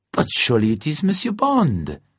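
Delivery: high, swooping, bright, animated delighted surprise. Narrator reading a man greeting the main character from behind him; surprised delight. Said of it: "Matisse's voice behind him was full of surprised delight".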